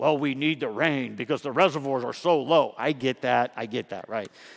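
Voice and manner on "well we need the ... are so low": low, put-on know-it-all nerdy voice. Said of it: "those nerdy people".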